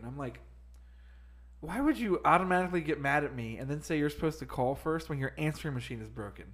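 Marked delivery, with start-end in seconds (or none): none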